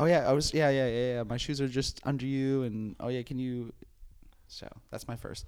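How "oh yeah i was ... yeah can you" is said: put-on passive-aggressive tone, higher and louder. Retelling what gets said to someone in the seat: imitating own passive-aggressive tone. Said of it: "my first approach is always just full passive aggressive".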